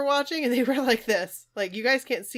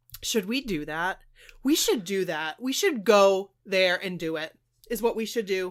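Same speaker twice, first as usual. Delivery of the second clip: ordinary talk, nothing marked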